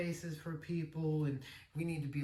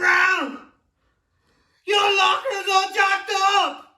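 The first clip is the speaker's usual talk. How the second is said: very high, very loud, shrill drill sergeant yell; 17 dB louder than usual. Retelling the first inspection, a superior yelling about the locker: imitating a yelling drill instructor. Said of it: "He's yelling at me".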